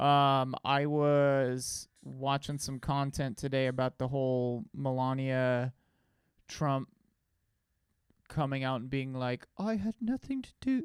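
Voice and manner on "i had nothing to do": put-on British accent, pitched very high. Imitating a public figure's denial: imitating Melania Trump in British accent. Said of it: "Why do I always go British with their voice?".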